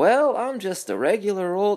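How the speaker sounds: very high, slow, drawn-out aw-shucks voice. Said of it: "that kind of voice to him".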